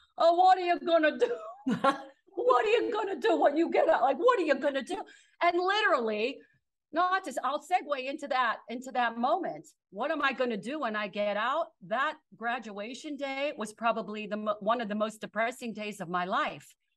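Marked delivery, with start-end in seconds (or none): 0.2-5.0 put-on quick, high, pressing Italian accent. Recalling a man's questions after her Carnegie Mellon acceptance, in his Italian accent. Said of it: "with his Italian accent".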